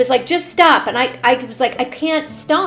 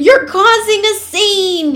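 mock furious, loud, high angry yelling; 8 semitones higher, 5 dB louder than usual. Speaker retelling an older gentleman yelling at them off microphone, retelling a man screaming. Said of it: "He kept screaming".

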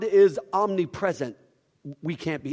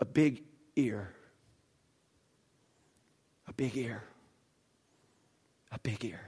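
hushed, cracking, broken voice near tears; 6 semitones lower, 10 dB quieter than usual. Retelling what a boy with tears in his eyes said, imitating a broken voice. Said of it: "in a broken voice".

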